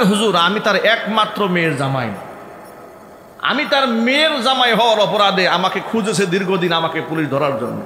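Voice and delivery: plain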